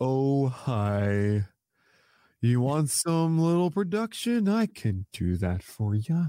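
slow, gloomy donkey voice drawl, hi stretched out. Naming a tier of players after Eeyore, in an Eeyore voice. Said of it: "That's Eeyore from Winnie the Pooh".

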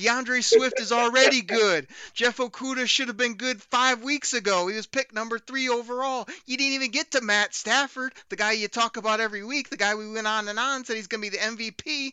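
all fired-up, worked-up sports-talk style rant. Responding to everything Benny said, speaker yells some more; yelling. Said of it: "so I can yell some more".

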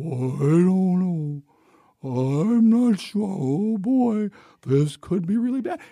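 put-on voice of a storybook donkey. Speaker describing how Congress reacted, in an Eeyore impression. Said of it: "I was not doing the Eeyore impression".

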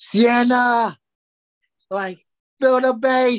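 high, loud, slow, belted motherly shout.

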